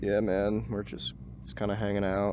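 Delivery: low, flat, level, low-energy monotone drone. Showing how they talk in his chat, just hanging out: flat monotone, low energy. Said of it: "it's a lot more monotone. I don't have that energy behind it".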